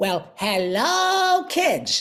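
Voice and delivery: high cartoon voice with hello drawn out. A cartoon voice actor greets a crowd of kids in his Yakko voice. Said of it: "That's me. I'm Yakko".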